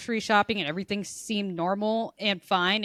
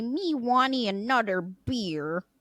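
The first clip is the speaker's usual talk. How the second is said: put-on slow, drawn-out, babyish toddler-style talk; 2 semitones higher than usual. A speaker describes a partner joining a brewery outing with friends, imitating baby talk. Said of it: "God forbid he join me and say".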